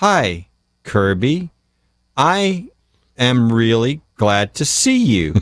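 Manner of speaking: slow, disingenuous, chopped delivery with long pause after I.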